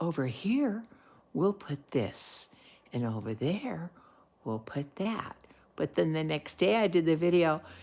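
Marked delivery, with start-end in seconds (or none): 0.0-5.3 soft, slow, drawn-out golf announcer voice. Recalling touching up an acrylic piece, speaker narrates it: soft, slow golf-announcer voice. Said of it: "I was talking real soft and slow, like I was on a golf channel going".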